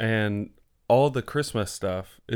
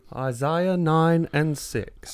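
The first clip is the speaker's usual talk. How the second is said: very slow, drawn-out, high put-on British accent; 6 semitones higher than usual. Echoing how the other speaker said a verse number: imitating a british accent. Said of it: "That was very British of you".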